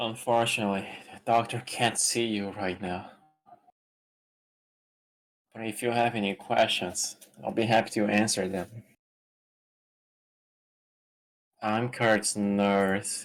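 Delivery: tired, bored, weary nurse voice. Voicing a nurse after being asked for a tired, bored nurse voice. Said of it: "Your best nurse voice".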